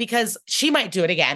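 usual speaking voice

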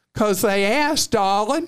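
put-on thick Southern accent. Quoting mom's answer to why she gave to these people, imitating mom's thick southern accent. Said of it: "my mom had the thickest Southern accent".

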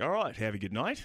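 put-on Australian accent. Retelling saying goodbye to a cab driver: put-on Australian accent. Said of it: "I couldn't drop the accent".

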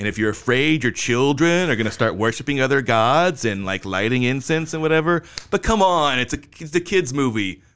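mocking, dismissive, heavy sarcastic tone. Redoing own summary of a movie's religious content: retelling own line sarcastically. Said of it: "I keep being so sarcastic".

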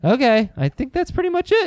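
voice pushed right up, very high-pitched. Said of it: "See if my voice can get any higher than that".

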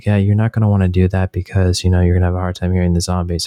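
flat, deadpan, low, dead-serious monotone. Speaker retelling advice from one of the guys, imitating a monotone serious guy. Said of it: "very like monotone, very like serious".

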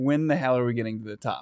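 ordinary talk

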